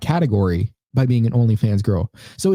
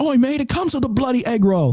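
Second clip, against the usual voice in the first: very high-pitched, put-on British accent; 12 semitones higher than usual. Describing the British version to a friend, the speaker quotes it in a British accent. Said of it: "in a British accent".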